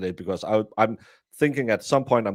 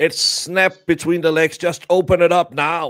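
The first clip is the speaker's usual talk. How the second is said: mock, fed-up yelling, high and loud; 7 semitones higher, 6 dB louder than usual. Recounting a memory, the speaker acts out a woman's answer, retelling an impatient yell. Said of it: "And she just yells".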